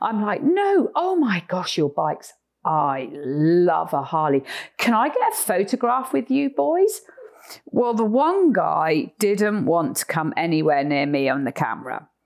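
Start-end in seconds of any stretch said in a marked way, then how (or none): 0.4-7.0 best-effort put-on British accent, animated and sing-song. Retelling greeting the men with Harley bikes while Chris sits in the car, best British accent. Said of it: "in my best British accent".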